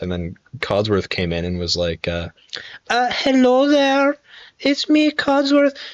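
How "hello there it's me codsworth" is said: put-on woman's voice, much higher, slower. Speaker retelling a game character's entrance, bad Codsworth woman voice. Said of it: "That's a horrible woman voice".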